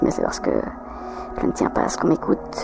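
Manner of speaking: soft, hushed, conspiratorial whisper.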